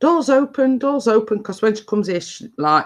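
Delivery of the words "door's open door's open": high, repeated, acted-out called shout. Retelling calling out that the door is open: retelling own shout. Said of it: "I'm shouting".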